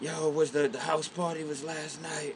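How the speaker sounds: soft, hoarse, blown-out, worn-out voice. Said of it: "his shit sounded shot".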